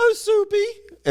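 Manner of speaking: man's very high falsetto put-on woman voice. Retelling a TV skit with a man playing a girlfriend: man imitating a woman's voice. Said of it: "in a voice like that".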